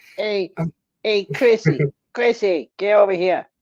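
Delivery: put-on, high-pitched voice calling out. Describing a short man, the speaker imitates him calling a woman: high-pitched voice. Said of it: "he had a high pitched voice".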